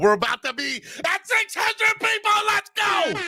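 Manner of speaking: hyped-up, excited announcing, swooping and rising. Host addressing the audience of the show, excited screaming. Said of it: "I'm sorry, I'm screaming. I'm a little excited".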